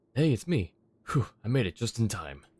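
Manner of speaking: out of breath. Arriving after running all the way here, out of breath. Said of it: "Why are you so out of breath?".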